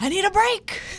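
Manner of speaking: very high, desperate yelling cry. Performer retelling a woman on the dance floor mid-set, retelling a desperate yell. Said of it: "she just yelled out in desperation".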